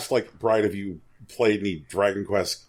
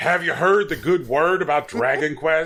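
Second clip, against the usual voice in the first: zealous, fervent superfan voice, high pitch; 7 semitones higher than usual. Imitating a fan who clasps your hand, bug-eyed: imitating a fervent Dragon Quest fan. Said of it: "look at you with big bug eyes and go".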